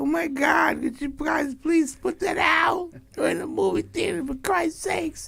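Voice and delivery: little high squeaky voice, slow shout.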